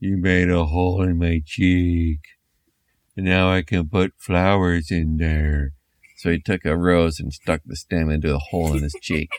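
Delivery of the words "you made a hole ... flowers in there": zombie character voice. Sprayed in the cheek, the daddy zombie speaks up, daddy zombie voice. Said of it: "And the daddy zombie said, / Flesh literally dripped off of their faces. They had teeth sticking out and bugged out of their heads, hair falling out, and bones that kind of stuck out here and there, b".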